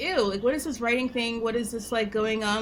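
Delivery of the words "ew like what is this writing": ordinary delivery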